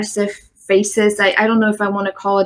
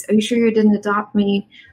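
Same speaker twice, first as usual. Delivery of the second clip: normal talking voice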